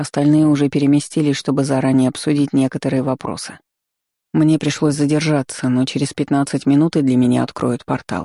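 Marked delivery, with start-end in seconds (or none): none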